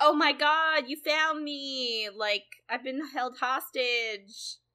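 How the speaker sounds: high, drawn-out, faked overjoyed surprise. Retelling a character who greets her captor: imitating feigned happiness. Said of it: "she sort of pretends to be happy to see him".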